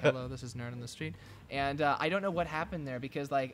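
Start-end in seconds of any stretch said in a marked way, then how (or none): 0.0-1.1 mock monotone, shy, quiet-sounding voice. Recalling his early tech video intros, imitating his monotone, shy self. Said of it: "all monotone and shy".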